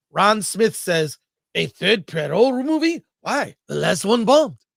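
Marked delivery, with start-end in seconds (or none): 1.6-4.5 loud put-on French accent. Speaker reading out a member's comment to a co-viewer, put-on French accent. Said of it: "Is that he wrote that with a French accent?".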